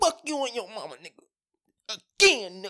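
emphatic, forceful, very high, drawn-out taunting. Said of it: "you put some emphasis on that".

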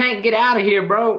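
high, loud yelling. Telling the dog Tank to get out during the podcast: yelling at a dog. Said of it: "I just heard you yelling at him".

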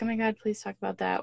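plain

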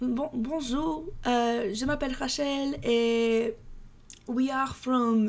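very slow attempted French accent. Acting out European tourist girls introducing themselves, attempted French accent. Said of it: "I can't do a French accent".

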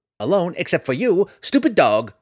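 squeaky sprite voice, high and loud. Narrator voicing the sprite Tifonus speaking to the dog, squeaky Tifonus voice. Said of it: "The sprite ambled about as best he could, ... Roddy froze at the unexpected squeaky voice".

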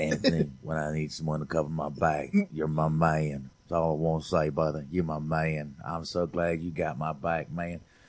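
low, soft bad Southern accent drifting Louisiana and Alabama. In a scene, speaking to Anthony in a bad Southern accent. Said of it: "It's coming out a little Louisiana and a little deep South Alabama".

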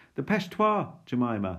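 high, very loud shouting. Reading a story where Jasper calls after his sister: shouting. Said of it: "Jasper shouted after me".

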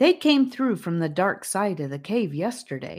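usual speaking voice

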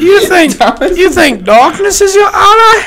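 belted out, high and loud. Quoting movie lines to friends in a Bane impression. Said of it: "my Bane impression".

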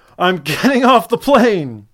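sudden, high, loud, swooping scream. Retelling standing up as the plane doors closed: retelling own scream. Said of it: "And I screamed".

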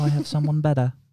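put-on Cockney accent. Urged by another speaker to use the Cockney, the speaker does a Michael Caine Cockney accent. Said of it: "Use the Cockney".

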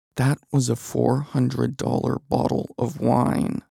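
furious whisper, anger barely held in. Reading a story aloud, voicing a character: whispering, holding back anger. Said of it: "Dwayne whispers, trying not to explode".

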